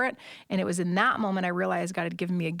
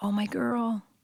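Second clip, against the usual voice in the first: whispered voice, higher pitch; 3 semitones higher than usual. Retelling what a dad said at a hug: imitating a whisper. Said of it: "whispers in the best moment".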